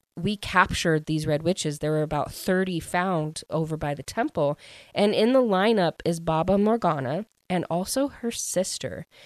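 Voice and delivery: ordinary talk, nothing marked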